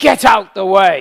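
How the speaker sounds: very loud shout. Recounting a man with bags behind them, the speaker retells a loud shout. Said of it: "He shouted very loudly right in my ear".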